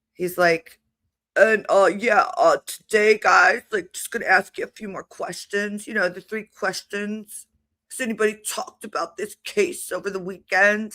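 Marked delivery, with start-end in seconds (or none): 1.4-11.0 laid-back surfer-dude voice. Imitating a judge asking his questions, Spicoli-style surfer drawl. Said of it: "He sounds like a surfer dude".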